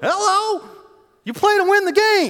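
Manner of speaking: squeaky, very loud, very high, drawn-out voice. Retelling a famous exchange, quoting the man who answered: imitating a high voice. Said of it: "He's got a real high voice".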